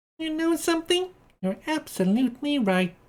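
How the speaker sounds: shrill, very high-pitched squealing voice. A voice in the tunnel answers the previous speaker, squealing high-pitched voice. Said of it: "Squeals a high-pitched voice".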